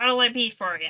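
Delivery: loud, little goblin character voice. Game master voices a little goblin merchant; goblin merchant voice. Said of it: "That's just their voice now".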